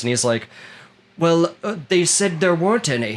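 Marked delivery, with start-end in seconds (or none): 1.2-3.2 put-on Cockney accent, pitched a touch high. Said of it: "he spoke with, like, this Cockney accent".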